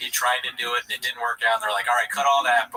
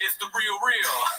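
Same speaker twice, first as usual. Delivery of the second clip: promo announcer style, pitched up higher; 8 semitones higher than usual. Imitating Brendan Schaub in a wrestling-promo-style ad: Brendan Schaub impression. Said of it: "That's Schaub doing their voice".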